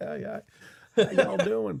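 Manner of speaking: laid-on, rough, high-pitched Western accent. Joking that a Western accent slipped into another voice: Bill Clinton impression. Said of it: "all of a sudden I'm Bill Clinton".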